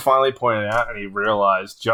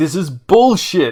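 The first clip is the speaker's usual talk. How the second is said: mock furious, high, raging outburst; 5 semitones higher, 4 dB louder than usual. Retelling a game night where a player storms around after losing: imitating Larry raging. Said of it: "a raging person".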